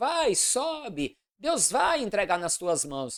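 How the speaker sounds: mocking, sarcastic, taunting tone. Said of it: "ele profetizou em tom de deboche".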